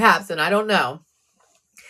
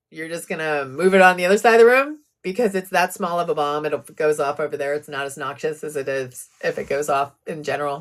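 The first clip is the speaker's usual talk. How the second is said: dry, lower sarcastic tone. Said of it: "I'm sorry for the sarcasm".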